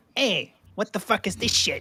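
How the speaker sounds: put-on New York Italian mobster voice. Suggesting a game redo, a player voices Locke as a New York Italian mobster. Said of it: "play Locke as a New Yorkian Italian mobster".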